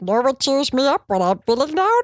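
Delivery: cartoon character voice with swooping, bouncing pitch. Quoting a cartoon character's line, done in a Stitch-like cartoon voice. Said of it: "I can do this voice".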